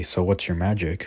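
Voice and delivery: plain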